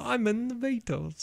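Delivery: put-on, very high, soft British accent. After the other speaker tries the same phrases: british accent. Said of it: "I'll do it in a British accent".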